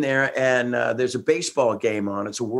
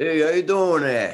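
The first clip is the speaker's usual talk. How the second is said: heavy, laid-on put-on New York accent; 4 semitones higher than usual. Retelling how a man greeted him, imitating a new york accent. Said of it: "like a New York kind of".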